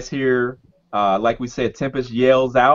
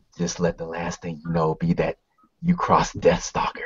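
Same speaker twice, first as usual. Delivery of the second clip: hushed, close-up whisper right at the ear; 7 semitones lower, 7 dB quieter than usual. Game master voicing a man who leans in behind Tempest, whispering in your ear. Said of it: "he whispers in your ear".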